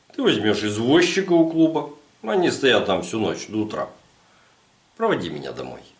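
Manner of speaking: plain reading voice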